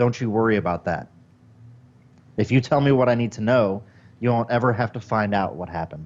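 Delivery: very serious, grave tone. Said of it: "very serious look on my face and say".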